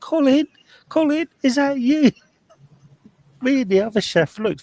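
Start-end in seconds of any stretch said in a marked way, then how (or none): 0.0-2.1 very high-pitched, shrill calling shout. Retelling opening the side door to a house: imitating someone shouting. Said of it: "this voice sh-, shouting".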